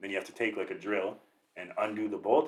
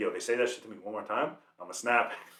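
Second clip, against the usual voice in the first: plain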